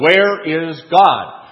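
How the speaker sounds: very loud, booming bellow. Telling a story, quoting a frustrated pastor finally asking the boy again: retelling a bellow. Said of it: "the pastor bellows out".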